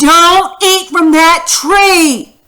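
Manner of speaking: slow, high, loud emphatic exclamation, "tree" drawn out. Showing learners how to read a sentence aloud, saying it with an exclamation mark. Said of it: "say it like that with the exclamation mark".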